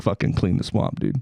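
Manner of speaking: put-on muttered whisper. Retelling what someone kept muttering during the service: imitating someone whispering. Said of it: "he kept just whispering under, under his breath".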